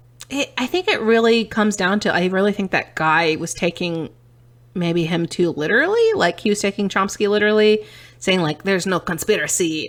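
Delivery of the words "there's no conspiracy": bad, terrible, put-on Dutch accent. Discussing a debate, the speaker quotes the man from it in a terrible Dutch accent. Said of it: "I'm doing a terrible Dutch accent".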